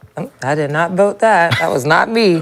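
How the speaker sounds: ordinary talk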